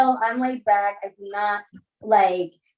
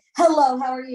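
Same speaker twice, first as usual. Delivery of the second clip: put-on obnoxious, showy manner; 4 semitones higher than usual. Retelling how an ex greeted everyone: imitating an obnoxious greeting. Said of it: "in an obnoxious way".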